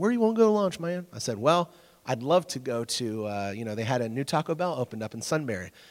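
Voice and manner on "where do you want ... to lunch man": put-on fast, pitched-up country accent, easy rural talk. Retelling Carrie asking where to go for lunch, imitating Carrie's country accent. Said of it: "he's got a country accent".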